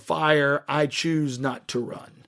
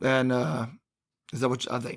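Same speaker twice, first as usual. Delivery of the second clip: ordinary delivery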